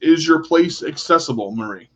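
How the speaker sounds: ordinary delivery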